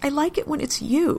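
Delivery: tiny, far too small, high squeaky voice. A man answers the woman looking at him, squeaking, voice far too small. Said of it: "he squeaks, his voice far too small".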